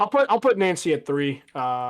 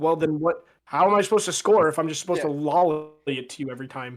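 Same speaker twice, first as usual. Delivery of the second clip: ordinary talk, nothing marked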